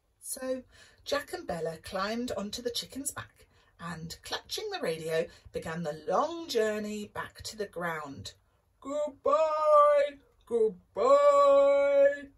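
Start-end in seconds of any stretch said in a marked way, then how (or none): 8.8-12.2 very loud, stretched-out, drawn-out holler. A giant waves his handkerchief as his friends leave, hollering. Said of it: "hollered the giant".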